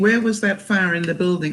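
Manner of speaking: plain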